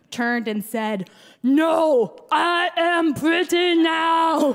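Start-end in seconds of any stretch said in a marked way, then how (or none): 1.4-4.5 very slow, loud monster voice. Retelling a reply to a sarcastic sister, imitating her own Frankenstein voice. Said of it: "in a voice that so much resembled Frankenstein's".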